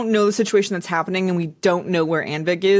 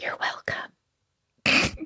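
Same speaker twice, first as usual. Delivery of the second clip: whisper, much quieter. Playing a character who has just stabilized a dying companion, whispering. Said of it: "And I whisper".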